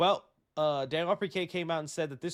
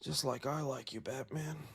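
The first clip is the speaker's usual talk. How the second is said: creepy put-on movie villain voice, quieter; 3 semitones lower, 8 dB quieter than usual. Retelling a creepy movie scene where a villain talks to batman: imitating a creepy movie villain. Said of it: "That was creepy in that scene".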